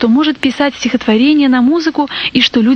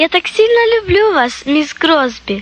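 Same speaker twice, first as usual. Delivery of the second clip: sudden, eager, high exclaiming cry; 5 semitones higher than usual. A girl hugs the woman who comforted her, exclaiming. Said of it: "воскликнула Сара".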